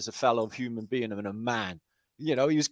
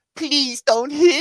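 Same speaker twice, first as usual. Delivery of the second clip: very high, loud, groveling sobbing voice; 13 semitones higher, 5 dB louder than usual. Retelling how a man facing arrest dropped to his knees; imitating someone crying and pleading. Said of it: "started groveling and crying and going".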